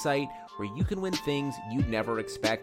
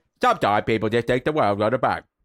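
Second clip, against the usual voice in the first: put-on voice of an older English-accented speaker; 3 semitones lower, 6 dB louder than usual. Doing the impression the others asked for: Michael Caine voice. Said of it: "my Michael Caine impression".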